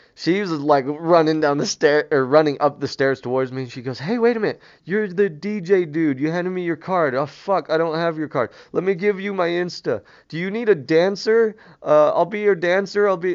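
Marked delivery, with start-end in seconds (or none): 4.0-13.4 put-on drunk, wasted, rambling party-girl babble. Retelling what a drunk girl said running up the stairs: imitating a drunk girl. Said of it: "she was all fucked up".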